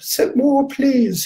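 put-on English accent, pitched very high. Giving Trungpa Rinpoche's response to almost any complex question, in Trungpa Rinpoche's high-pitched English accent. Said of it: "in his high-pitched English accent".

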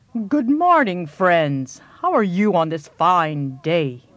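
big, deep, rumbling, laid-back booming bellow. Narrator reading Bullfrog's morning greeting to his friends: Bullfrog bellowing. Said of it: "bellowed Bullfrog".

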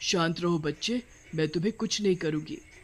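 plain reading voice

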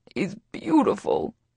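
high, croaked words, choked with emotion. Narrator reads a tearful man's line, croaking. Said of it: "he croaks".

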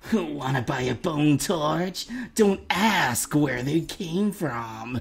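slow, put-on, bony skeleton character voice. Asked to say a line in character for a video: put-on skeleton merchant voice. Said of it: "say in a skeleton merchant voice".

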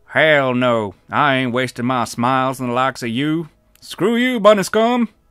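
very loud, rough-and-tough, rugged manly voice. In a story, Jexa switches accents mid-exchange, rugged manly accent. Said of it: "Jexa's accent changed to that of a rugged, manly man".

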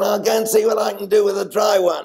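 squeaky, high, little voice. Retelling what Bradman said before batting: Bradman's squeaky voice. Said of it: "he said in that squeaky voice".

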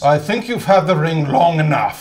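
very loud, full-voiced delivery. Cold-reading a Lord of the Rings scene, asking Bilbo to leave the ring: playing Gandalf. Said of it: "and I'll play Gandalf".

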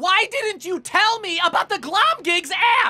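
angry tone. Confronting Glomgold about where the evidence points: angry.

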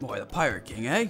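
put-on slightly gruff, low English-Scottish pirate accent. Performer voicing a pirate as asked, gruff English-or-Scottish pirate voice. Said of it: "It's also going to be a little gruff".

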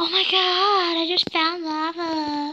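very slow, high, loud giddy gasp, lava stretched. Mocking the other player's reaction to finding lava: mocking an excited gasp. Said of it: "You sound like a girl that just learned how to play Minecraft".

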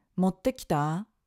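rising tune on 持ってきた, the end lifted. Lesson on asking questions without ka at the end: rising intonation on 持ってきた. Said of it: "we use a rising intonation like".

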